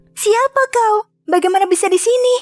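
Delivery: frightened, scared voice. Reading Rapunzel meeting a stranger in her tower: frightened. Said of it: "Rapunzel ketakutan".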